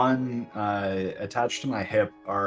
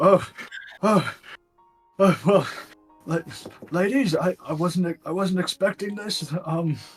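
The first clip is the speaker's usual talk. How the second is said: out of breath, stammering, words breaking off, pitched up; 9 semitones higher, 4 dB louder than usual. In character, the speaker trudges up to greet some ladies, out of breath. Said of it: "I come up kind of out of breath".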